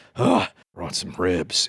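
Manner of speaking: deeply exasperated, slow, swooping lament. Quoting him putting down the ribs, mock-exasperated. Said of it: "he would say it like that. ... he would be very exasperated about them".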